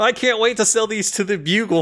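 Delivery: acted-out, re-enacted shout. Describing a man in a speeding car snapping photos of Spider-Man, retelling a shout. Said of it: "and then shouts".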